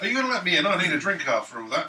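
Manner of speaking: very loud shout. Calling up to an innkeeper's window in character: shouting up at a window. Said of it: "I shout up at the window".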